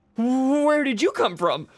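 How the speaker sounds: high, loud, surprised, startled shouting.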